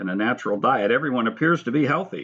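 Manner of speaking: plain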